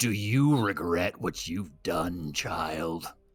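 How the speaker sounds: huge, disembodied, booming voice. Voicing a tree stomping up to two children: booming tree voice. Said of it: "the voice is just booming out of nowhere".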